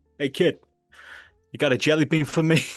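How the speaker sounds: put-on heavy New York accent, laid on. Retelling what a man said to him as a kid with a bag of sweets, thick new york accent. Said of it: "He had like a thick New York accent".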